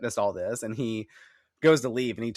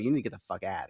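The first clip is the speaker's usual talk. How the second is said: put-on curt, snapping voice, a bit quieter; 3 semitones lower, 5 dB quieter than usual. Retelling a scene where Giles snaps back: imitating Giles snapping back. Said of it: "he snaps back at him".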